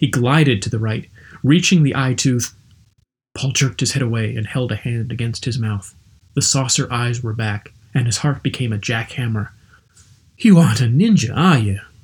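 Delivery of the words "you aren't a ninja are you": raised, shaky, demanding voice on exhale. A startled man, his heart pounding, confronts the man beside him; shaky demanding question. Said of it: "he demanded on a shaky exhale".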